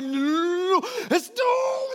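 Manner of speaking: mock freaked-out yell, very high, very slow, drawn-out. Retelling grabbing scissors from a running child: retelling a panicked yell. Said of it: "I'm trying not to yell ... but I am yelling".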